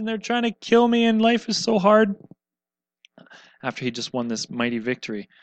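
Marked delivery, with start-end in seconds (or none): 0.0-2.2 high, loud whining voice. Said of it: "he kinda whines and says".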